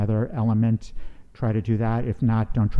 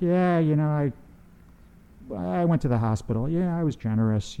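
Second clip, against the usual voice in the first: careless, unearnest, offhand, pitched-up casual tone; 5 semitones higher, 4 dB quieter than usual. Coaching others to speak earnestly, the speaker shows the wrong way: offhand, not earnest. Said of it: "Not like".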